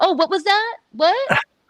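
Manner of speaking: mock sassy tone, very high-pitched. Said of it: "the sass in me".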